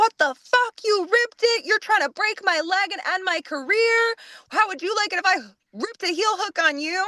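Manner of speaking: mock, shrill, furious screaming rant. Retelling how Miss Cloth flew off the handle after an ankle lock: retelling Miss Cloth's furious screaming. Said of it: "flies off the handle and starts screaming at her".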